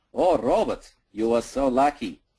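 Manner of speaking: put-on heavy, slow Russian accent laid on thick. Retelling what a chess player said after the game: thick russian accent. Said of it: "He has a thick Russian accent".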